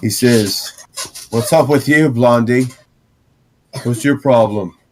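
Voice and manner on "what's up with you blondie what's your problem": put-on swaggering, big-shot punk teenager voice. Odoric comes around the tent and calls out: Odoric, swaggering punk teen. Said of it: "[name] is a swaggery punk teen, 18 years old, Mhm. 18, red hair, acting like he's got some kind of position of importance, / [name] is a swaggery punk teen, 18 years old, Mhm. 18, red hair, acting lik".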